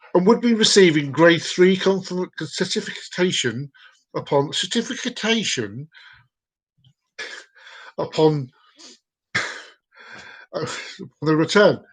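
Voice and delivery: slow reading, holding back laughter. Reading a text aloud, trying not to laugh while reading. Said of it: "I'm trying not to laugh as I'm reading this".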